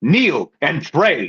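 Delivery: insistent, intense, commanding tone. Voicing a figure who speaks into the players' minds: screaming command. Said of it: "she screams it loud in your minds".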